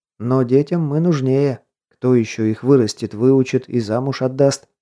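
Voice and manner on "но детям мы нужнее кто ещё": usual speaking voice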